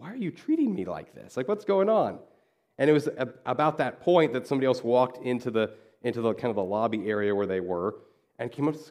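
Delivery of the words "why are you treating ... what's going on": mock exasperated, pitched-up, swooping frustrated voice. Retelling how a visitor complained to two men stopping him: retelling a frustrated man. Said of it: "He's getting really frustrated".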